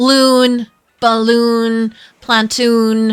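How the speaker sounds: long drawn-out double o's. Speaker shows a listener how their group says double O words: long drawn-out double O's. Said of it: "how we said our double O's".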